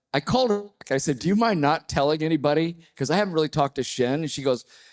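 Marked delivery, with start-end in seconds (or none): none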